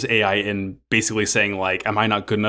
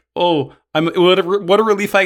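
put-on nervous stuttering, higher, louder, slower; 9 semitones higher, 6 dB louder than usual. Telling a story about a frightened woman, the speaker quotes her, imitating nervous stuttering. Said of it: "stuttering and barely getting through sentences".

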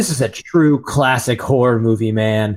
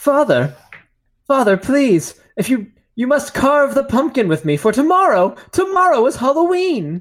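put-on young boy voice, much higher; 13 semitones higher than usual. A son asks his father, who must work late, to carve the pumpkin; little Oliver Twist voice. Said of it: "turned his son into a little Oliver Twist".

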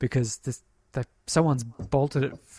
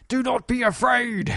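very high, loud, authoritative commanding yell; 11 semitones higher, 5 dB louder than usual. Retelling how a voice yells into a car at a little girl, imitating a commanding voice. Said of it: "very commandingly tells the little girl".

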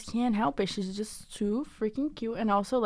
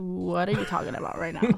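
irritated, attitude-filled tone; 3 semitones lower than usual. Retelling how he replies to a trend saying: imitating someone with attitude. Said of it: "with that attitude".

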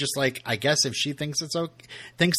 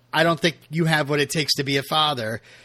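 plain

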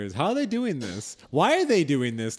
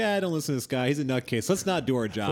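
plain

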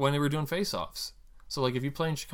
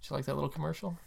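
plain

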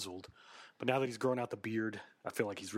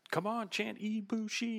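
very high, slow, drawn-out, jeering, mocking taunt; 13 semitones higher than usual. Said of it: "he'll mock the fans".

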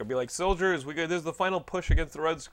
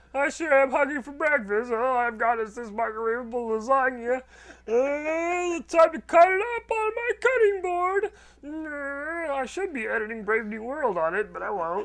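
very high, loud, goofy mocking voice; 10 semitones higher, 5 dB louder than usual. Acting out what another speaker said this morning: mocking voice of Jonathan. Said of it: "you were like".

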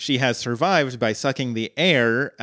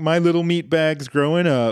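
acted, high, weepy, sobbing, sentimental crying voice; 5 semitones higher than usual. Retelling a scene where Bender cries after Fry leaves: imitating Bender crying. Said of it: "he starts crying, and he's like".

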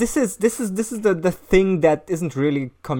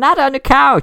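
high, loud parrot-like cry. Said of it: "and the parrot says".

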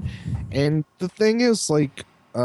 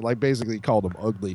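ordinary talk, nothing marked

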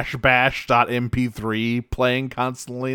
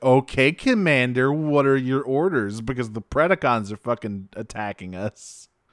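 normal talking voice

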